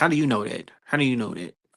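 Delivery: smirking put-on voice. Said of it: "he kinda said it with a smirk".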